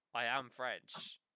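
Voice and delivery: put-on American accent. Retelling a movie waiter's line, in an American accent.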